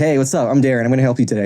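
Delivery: ordinary delivery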